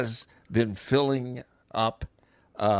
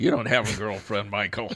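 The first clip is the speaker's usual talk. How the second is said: mock, snappy, sharp snapping back, faster. Retelling how she answered his girlfriend remark: retelling a snappy comeback. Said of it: "she just snaps back".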